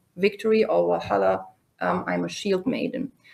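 ordinary delivery

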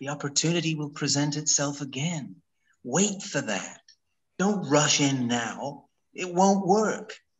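bad, terrible, over-the-top, hammy American accent. Quoting someone's advice about mistakes: terrible ham American accent. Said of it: "I'm doing a terrible ham American accent, but this is how he sounded".

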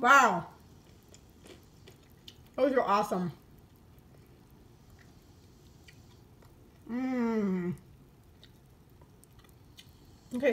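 talking through a mouthful, chewing. Tasting a just-cooked bite on camera for viewers: talking while chewing. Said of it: "sorry I'm chewing on camera".

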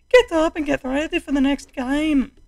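comic, very high-pitched, put-on Irish accent. Voicing a character from a show while playing a game, put-on irish accent. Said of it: "a hilarious accent".

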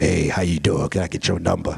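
very deep, creaky, rough voice.

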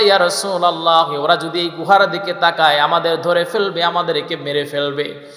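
ordinary talk, nothing marked

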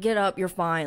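put-on scolding, blaming tone. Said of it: "blaming him for it".

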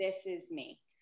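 ordinary talk

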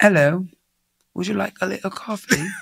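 sorrowful put-on British accent. Asked to show their acting, the speaker plays a server in a sad British accent. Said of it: "Give me British and sad".

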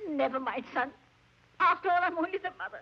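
speaking through tears, crying. A mother speaks to her son about her daughter-in-law: crying. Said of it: "Ma, don't cry".

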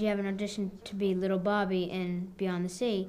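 plain

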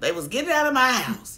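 high, loud, joyful screaming.

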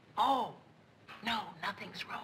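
whispered words. Answering a whispered question so as not to wake Joe, whisper. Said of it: "you don't have to whisper".

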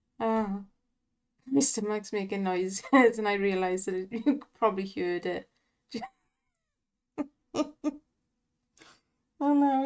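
giggling and laughing through the words. Commenting on a slot bonus with the giggles: laughing while talking. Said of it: "it's giving me the giggles".

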